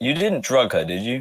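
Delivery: quiet, muttered aside not meant to carry. In a role-play scene, an aside while another character presses about a trade, said under the breath. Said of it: "I say that under my breath".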